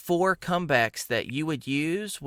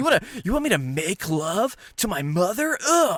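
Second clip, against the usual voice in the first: high, puzzled, bewildered bully voice; 5 semitones higher than usual. Acting out how the butt face answers: imitating a confused bully.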